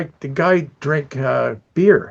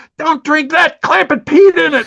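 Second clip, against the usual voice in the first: mock yelling, higher and louder; 13 semitones higher, 7 dB louder than usual. Retelling a prank story where a coworker yells a warning: retelling a yell. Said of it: "and he yells".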